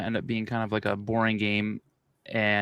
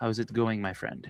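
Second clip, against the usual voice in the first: Russian-sounding accent, quieter; 7 dB quieter than usual. Reading a chat message aloud: Russian-sounding accent. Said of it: "Why did I sound Russian?".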